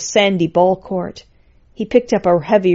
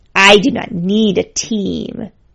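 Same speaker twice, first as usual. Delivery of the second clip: slow, contemptuous, scornful sneering tone. Lord Skull answers Zero's suggestion that he pick a team, sneering. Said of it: "Lord Skull sneered".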